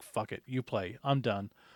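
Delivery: put-on angry outburst. Retelling quitting a game after bad dice rolls: retelling an angry outburst. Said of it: "I just had to leave, calm down".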